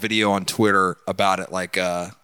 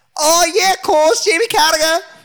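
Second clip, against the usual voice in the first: put-on Scouse accent, higher and louder; 7 dB louder than usual. Asked to do a voice, performing an impression: Jamie Carragher voice. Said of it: "Give me your Jamie Carragher voice".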